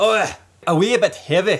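fake Scottish accent. Trying accents while discussing a wee heavy beer, speaker attempts a bad Scottish accent. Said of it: "How do we do Scottish?".

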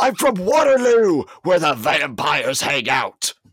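high-pitched, loud yell.

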